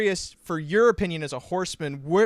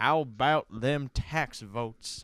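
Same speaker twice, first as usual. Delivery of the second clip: put-on old grandpa voice, as if corn husk in mouth; 4 semitones lower, 6 dB quieter than usual. Joking about turning into an old porch-sitting grandpa: imitating Grandpa Huxaberry. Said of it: "turn into Grandpa Huxaberry sitting on the porch with a corn husk in his mouth going".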